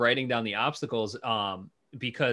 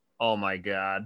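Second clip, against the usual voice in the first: embarrassed, flustered exclamation; 6 semitones lower, 4 dB quieter than usual. Retelling a boyfriend's reaction to a Jumbotron prom invite: imitating an embarrassed boyfriend. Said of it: "so embarrassed".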